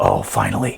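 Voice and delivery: soft, low, taunting whisper. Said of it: "he whispers".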